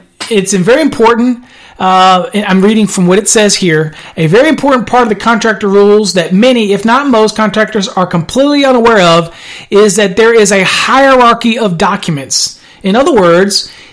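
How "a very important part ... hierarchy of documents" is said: ordinary delivery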